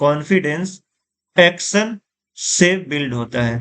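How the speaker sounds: the word action said with heavy stress. Teaching emphasis with an example sentence, the speaker puts stress on action. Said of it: "इस sentence में हम action पे emphasise कर रहे हैं".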